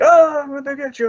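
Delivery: put-on Transylvanian accent. Pietro is playing vampire with the kids, throwing on a thick Transylvanian vampire accent. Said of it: "throwing on kind of the thick Transylvanian accent like".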